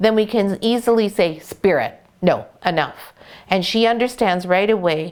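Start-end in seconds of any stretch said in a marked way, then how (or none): 1.4-3.1 firm, stern, serious, no-nonsense voice. Telling the dog to stop barking: firm, stern tone. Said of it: "from your tone... that you are serious and you want her to pay attention".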